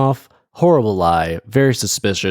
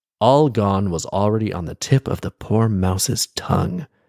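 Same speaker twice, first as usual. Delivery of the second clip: ordinary delivery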